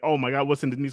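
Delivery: normal talking voice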